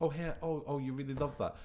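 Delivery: mock tender, soft, high, gentle tone. Retelling how a character talks to a severed head: imitating a gentle, tender tone. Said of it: "he's being so gentle".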